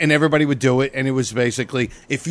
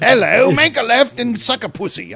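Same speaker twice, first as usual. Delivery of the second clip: very high, put-on female British accent; 10 semitones higher, 3 dB louder than usual. Mimicking a voice giving driving directions: put-on female British voice. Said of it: "a girl British voice".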